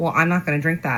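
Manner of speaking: normal talking voice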